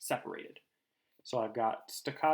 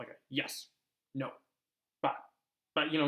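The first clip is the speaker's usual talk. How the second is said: short, clipped staccato words, pitched much higher; 3 semitones higher than usual. Explaining staccato speech, the speaker demonstrates: short staccato words. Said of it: "short sounds like that".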